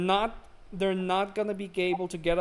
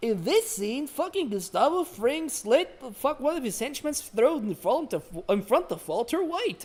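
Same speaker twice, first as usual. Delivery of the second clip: put-on children's dinosaur voice; 6 semitones higher than usual. Imagining a children's dinosaur touring TV show locations: Barney the Dinosaur voice. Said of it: "Barney's like".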